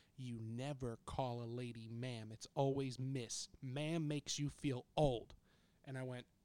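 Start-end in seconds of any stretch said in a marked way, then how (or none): 0.2-5.3 put-on very serious, stern old lady voice. Retelling how an elderly customer scolded the speaker: imitating a very serious old lady. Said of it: "points at me in a very serious way and says".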